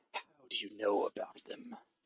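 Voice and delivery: close, slow, very hushed, barely audible whisper. Voicing a character leaning cheek to cheek with a player: whispering in character. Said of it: "whispers in your ears".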